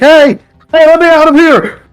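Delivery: very high-pitched voice, calling out. Voicing someone banging on a locked door: trapped person banging on door, calling out. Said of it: "you can kinda hear someone banging on it, like".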